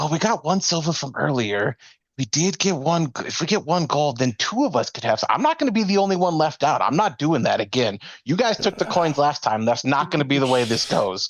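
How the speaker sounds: hushed whisper. Voicing characters who huddle and argue over coins: whispering in a huddle. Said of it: "And then they turn back in and whispering".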